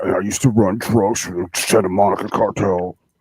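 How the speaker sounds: put-on low deep voice. Joking about being in witness protection: put-on lowered voice. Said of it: "lower my voice".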